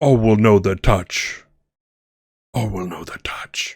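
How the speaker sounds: unearthly, otherworldly echoing, reverberating voice. Retelling a scene where a being speaks just before a man collapses: otherworldly reverberating voice. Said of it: "you hear this voice that's otherworldly, kind of reverberates".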